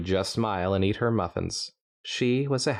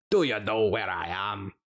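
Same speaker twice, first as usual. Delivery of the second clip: put-on plain Scottish accent. Voicing an earth pony character, in a Twelfth Doctor Scottish accent. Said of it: "really going for more of a number twelve here".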